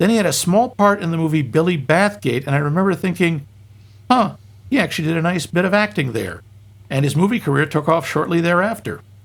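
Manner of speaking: usual speaking voice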